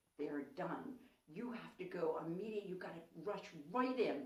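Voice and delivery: whispered voice. Retelling what he whispered in her ear at the gate: retelling a whisper. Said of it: "he whispers in my ear".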